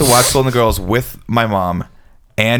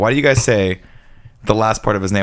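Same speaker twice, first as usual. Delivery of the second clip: normal talking voice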